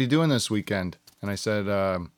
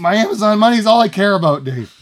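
shrill, booming, fake agitated, worked-up ranting; 10 semitones higher, 10 dB louder than usual. Ranting about a commenter ruining the show: mock agitated ranting. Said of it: "Snap out of it, [name]".

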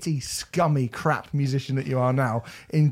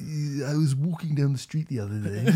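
put-on royal voice; 5 dB quieter than usual. Retelling a school friend's Prince Charles impression. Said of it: "do your impression of Prince Charles, Keane".

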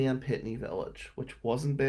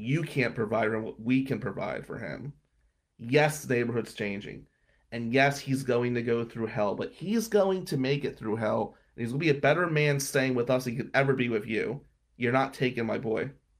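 ordinary talk, nothing marked

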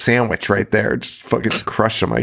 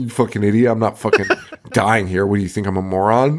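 put-on aggressive character voice. Retelling a film scene, quoting a character's reply: imitating Merchant, aggressive. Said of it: "He's so aggressive about that".

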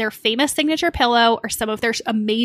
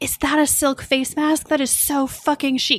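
put-on British accent in a higher pitch; 3 semitones higher than usual. Retelling what an actress said about a silk mask: imitating a British accent. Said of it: "she had a British accent".

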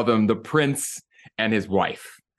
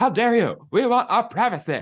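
very high-pitched cartoon voice; 12 semitones higher than usual. Retelling a South Park scene where the couple scolds Kyle: Harry and Meghan impression. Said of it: "That was a really good impersonation".

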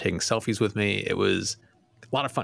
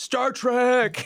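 very high, yelled-out shout; 4 dB louder than usual. Speaker retelling a fan yelling out while walking away, retelling a yelled-out shout. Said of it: "he just yells out".

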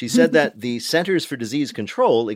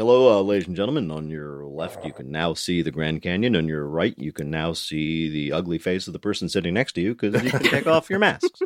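low airline captain announcement voice; 6 semitones lower than usual. Speaker imagines pilots making flight announcements, in a Chuck Yeager-style pilot voice. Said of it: "standard Chuck Yeager style pilot voice".

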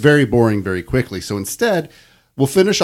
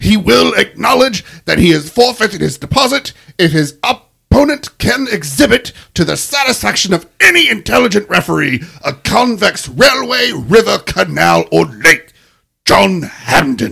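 furious, very British, rasping, loud and slow; 8 semitones higher, 5 dB louder than usual. Reading a wordy passage aloud for a listener in a very angry, very British voice. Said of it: "it was very angry and very British".

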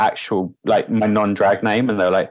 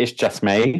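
slower Essex-accented speech. Explaining what people think a name means because of her accent, essex accent. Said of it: "I have an Essex accent and it's me going".

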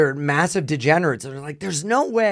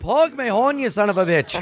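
put-on Irish accent, pitched up; 5 semitones higher than usual. Imitating an ex's dirty talk, in a fake Irish immigrant accent. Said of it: "imitate her dirty talk as an Irish immigrant".

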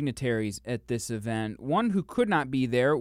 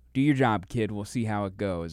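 ordinary talk, nothing marked

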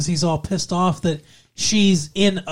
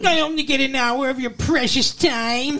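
high, whiny, mocking put-on complaining tone; 9 semitones higher than usual. Retelling a character's complaint in a couple's argument, mock-whiny. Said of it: "he whines like a little bitch".

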